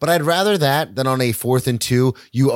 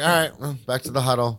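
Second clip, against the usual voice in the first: put-on indifferent, fireless tone, quieter; 4 dB quieter than usual. Imitating players after a missed pass: imitating players with no fire. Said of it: "there's no fire".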